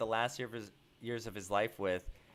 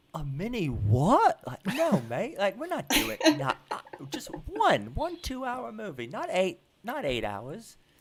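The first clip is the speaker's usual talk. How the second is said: put-on incredulous British accent, high, loud and swooping; 9 semitones higher, 6 dB louder than usual. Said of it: "Here's my impression of [name]".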